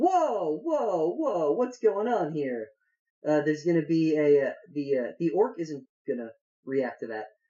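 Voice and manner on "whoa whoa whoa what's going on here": high, loud startled crowd voices. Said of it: "everyone in the camp is gonna stand up and be like".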